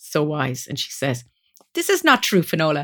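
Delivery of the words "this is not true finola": put-on short, clipped Eastern European accent. Speaker quotes her wise friend correcting her, in Ula's really clipped voice. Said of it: "in this really clipped voice".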